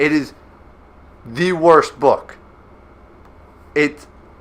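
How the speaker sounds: angry, worked-up voice with temper audibly rising. A speaker rants about the worst book they ever had to read, angry. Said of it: "I'm getting angry again".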